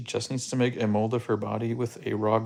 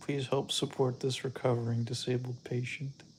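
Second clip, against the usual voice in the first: put-on pleading little-girl voice, quieter; 2 semitones higher, 6 dB quieter than usual. The speaker mocks a sick little girl asking for money, mock little-girl plea. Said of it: "It's like a little girl".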